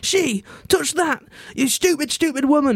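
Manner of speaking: mock bad Geordie accent, shrill, very slow shout. Retelling the boy yelling at the little old lady: retelling a shout, bad Geordie accent. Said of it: "shouting at her in a bad Geordie accent".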